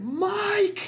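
acted-out furious shrill screech, name stretched long. Retelling a woman screaming at her secretary from her office, retelling an angry scream. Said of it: "she screams at him".

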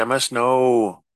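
mock whining baby voice. Acting out a plea to Yoda: put-on whiny baby voice. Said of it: "I'm a whiny baby".

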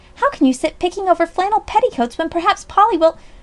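very high, astonished, amazed outburst. A woman speaks to a mother sorting flannel petticoats; exclaiming in amazement. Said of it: "exclaimed Charlotte Chatterton in amazement".

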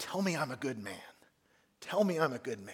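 desperate, soft pleading voice. Retelling a movie scene where a weeping old man asks his wife, retelling a desperate plea. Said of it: "with desperation in his voice".

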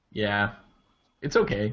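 deflated, unenthusiastic, let-down, disappointed. Asked if they are on T-Mobile now, answering disappointed. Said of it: "you sounded pretty disappointed".

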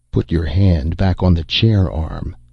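ordinary delivery

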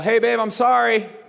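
loud, high yell, calling out. Retelling calling from the bathroom to his wife in the next room, yelling. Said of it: "she'll just hear me yell".

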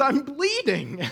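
very high, loud, shrill shriek. Telling how a girl found blood on her feet and reacted: retelling a scream. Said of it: "She screams".

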